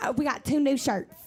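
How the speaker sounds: put-on East Tennessee southern accent. Retelling what a woman said with the sweetest, most sincere face: imitating an East Tennessee accent. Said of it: "incredible Nashville accent".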